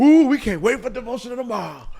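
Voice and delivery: excited, hyped-up delivery.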